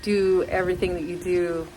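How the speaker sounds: ordinary talk, nothing marked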